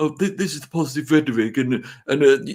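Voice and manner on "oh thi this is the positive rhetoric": put-on posh accent with exaggerated fancy words. Mocking a pundit who uses posh words: imitating Simon Jordan's posh accent. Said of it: "He thinks if he uses posh accent and big words".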